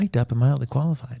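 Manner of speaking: very quiet, soft, hushed delivery. Host welcoming listeners back to mic'd up and mildly qualified, very quietly. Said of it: "he said that very quietly".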